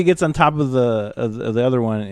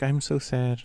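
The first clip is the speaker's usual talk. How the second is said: put-on mousy little voice, quieter; 8 dB quieter than usual. Imitating a cutesy character from a show: mousy little Abby voice. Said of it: "She's a little mousy one that's like".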